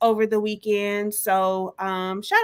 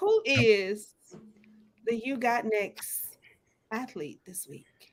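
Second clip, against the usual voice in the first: slow, soft, halting read, pausing mid-phrase; 6 dB quieter than usual. A co-host reads out the segment question on a show, reading slowly. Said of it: "Why did you read it so slow?".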